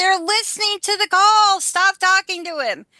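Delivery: high, screamed delivery. Retelling a lawyer's warning about a jail call: imitating someone screaming.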